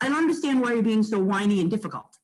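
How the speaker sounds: ordinary talk, nothing marked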